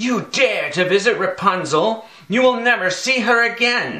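high, loud, shrieking witch's scream. Narrator reads the witch confronting the prince in the tower, screaming. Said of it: "screamed the witch".

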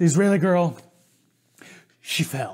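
puffing, winded, words squeezed between breaths, panting. Retelling a friend running up the trail: imitating someone out of breath. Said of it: "huffing and puffing, out of breath".

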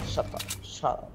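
low, quiet British accent.

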